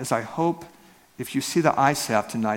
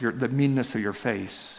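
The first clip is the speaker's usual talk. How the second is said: ordinary talk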